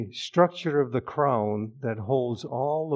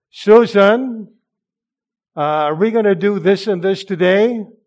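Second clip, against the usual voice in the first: raised voice, very loud; 8 semitones higher, 11 dB louder than usual. Showing how he would talk if he raised his voice: raised, loud voice. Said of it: "I would raise my voice like this".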